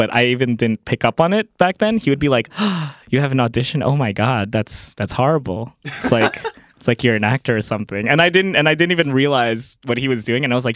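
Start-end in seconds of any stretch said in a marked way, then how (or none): none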